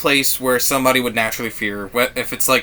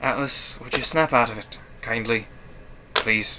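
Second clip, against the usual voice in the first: let-down, disappointed voice; 6 dB quieter than usual. Voicing a character who asks a crying companion to snap out of it: disappointed Sigel voice. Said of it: "he just looks at you disappointed".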